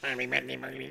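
robotic machine voice. Retelling a scene with a robot from a film, robot voice with no voice box. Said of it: "It sounds like he hasn't got a voice box".

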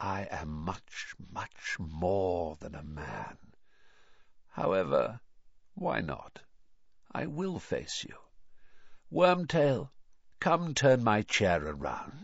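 very faint, icy, cold, barely audible, slow. Narrating a story, the cold voice answers a Muggle and addresses Wormtail; barely audible. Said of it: "barely audible now".

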